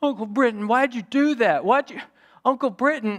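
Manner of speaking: put-on high-pitched, hurt, upset little-boy voice. Retelling a boy thrown off a tube complaining to his uncle, imitating upset little Halsey. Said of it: "little Halsey was all upset".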